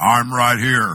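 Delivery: heavenly voice, as if from above. Leading a crowd in call and response, answering as God in a voice of God. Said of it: "that was me mimicking the Lord".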